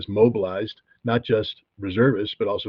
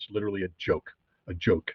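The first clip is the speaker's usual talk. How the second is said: ordinary talk, nothing marked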